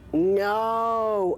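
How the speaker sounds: mock very high, very loud, shrill scream. Retelling the moment of a highway car crash: retelling a high scream. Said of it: "I was screaming".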